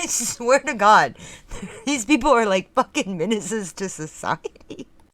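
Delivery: giggling, laughing speech with drawn-out words. Describing a video of someone on a sidewalk, laughing while talking. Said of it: "I'm trying not to laugh so you can hear me".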